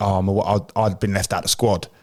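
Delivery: ordinary talk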